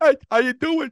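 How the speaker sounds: put-on deaf speech sound. Retelling what a woman in an alley said: imitating a deaf woman's speech. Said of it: "this woman speaks like that".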